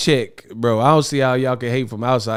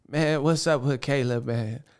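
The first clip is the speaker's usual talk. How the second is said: put-on shaky crying voice, quieter; 7 dB quieter than usual. Mocking a boxer's interview voice: Terrence Howard cry voice. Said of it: "he had the cry voice like Terrence Howard".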